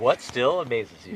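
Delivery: very loud, booming game-show host voice. Reading a question aloud after being asked to say it: show voice. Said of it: "show voice on".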